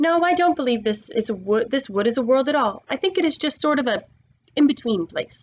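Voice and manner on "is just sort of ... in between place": ordinary delivery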